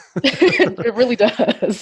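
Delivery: chuckling through the words. Agreeing with the other speaker, laughing.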